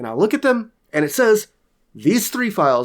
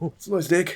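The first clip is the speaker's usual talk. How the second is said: put-on New Zealand accent, quieter; 2 semitones higher, 6 dB quieter than usual. Quoting a commercial with friends, the speaker repeats its line: New Zealand accent. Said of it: "the New Zealand deck commercial".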